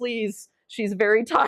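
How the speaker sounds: mock begging, earnest imploring pleading tone. Retelling how a companion asked hotel staff for early check-in: imitating someone pleading. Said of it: "pleading with her, like".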